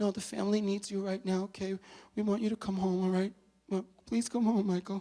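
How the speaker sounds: acted-out crying in a high, tearful voice. Retelling a phone call from his wife Donna, imitating Donna crying. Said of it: "she's on the line and she's crying".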